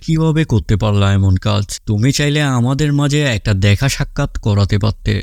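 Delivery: ordinary delivery, nothing marked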